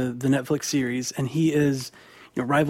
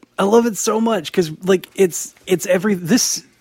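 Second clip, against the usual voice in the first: gushing, high-pitched, excited, stumbling over every word; 6 semitones higher, 4 dB louder than usual. Praising a comic series to another speaker, excited, tripping over words. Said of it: "I'm getting so excited that I'm mixing up all of my words".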